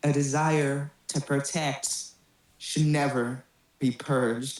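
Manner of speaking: far-off, distant voice with an echo. Narrating a scene, a voice answers a player's challenge: echoing distant voice. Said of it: "an echoing distant voice goes".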